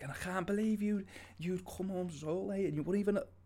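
put-on strong Liverpool Scouse accent, high-pitched. Retelling being told off for coming home late, in a strong Liverpudlian accent. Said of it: "in a relatively strong Liverpudlian accent".

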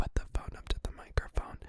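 hushed, unvoiced, very quiet whisper. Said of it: "she whispered".

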